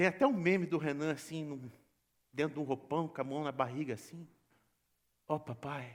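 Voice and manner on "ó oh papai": placid, very passive, calm and soft delivery. Imitating a prayer meme in a bathrobe, hand on belly: mock-calm Renan prayer impression. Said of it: "quando ele ora, ele ora numa passividade. Ele faz assim".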